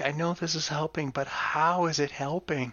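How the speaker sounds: mock mutter under breath. Recounting what she said when he spoke, imitating a mutter under breath. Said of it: "kind of whisper, mutter under her breath".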